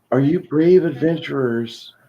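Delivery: put-on small, girlish voice. Game master voicing a voice inside a player's head: little feminine voice. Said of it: "a little feminine voice inside your head says".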